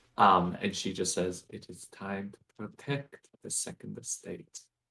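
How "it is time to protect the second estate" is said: barely audible, faint, hushed whisper. Speaking in character so only two companions hear: quietest whisper. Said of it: "the quietest whisper".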